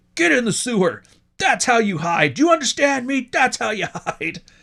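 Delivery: mock, shrill, very high berating yell. Retelling how a man at hide and seek berated his kid, imitating a dad berating his kid. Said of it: "he's just berating him and berating him".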